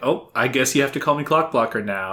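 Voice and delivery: ordinary delivery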